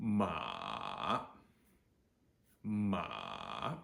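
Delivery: very low, crackling, creaky third-tone dip on "ma". Demonstrating the third tone to a learner, very low, creaky dipping tone. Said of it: "you can hear my voice f- crackling".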